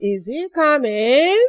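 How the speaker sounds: rising pitch on the word coming. Yes-or-no question example in a lesson on rising tone: rising on coming. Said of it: "We use rising tone to ask yes or no questions".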